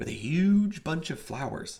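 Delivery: ordinary delivery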